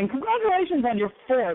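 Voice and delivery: eager, excited voice rising high. Host welcoming a guest to the show and congratulating them, excited, voice going up. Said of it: "You see how my voice went up?".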